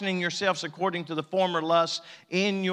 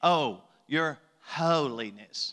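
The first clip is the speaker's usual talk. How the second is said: sarcastic, mocking, falsely reverent tone; 4 semitones lower than usual. Recalling how somebody said a title to them: mock-sarcastic, imitating someone. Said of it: "they said it in that manner, almost sarcastic".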